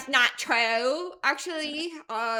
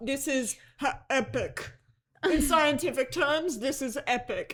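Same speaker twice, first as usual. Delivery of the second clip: put-on gamer accent. Mocking how a man speaks, quoting him: low-key Fortnite accent. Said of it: "low key Fortnite accent".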